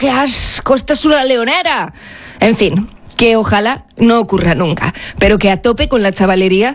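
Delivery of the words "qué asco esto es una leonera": put-on mild, held-back, grossed-out, disgusted exclamation. Telling of airing out the cells for months, retelling a disgusted shout. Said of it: "al grito de".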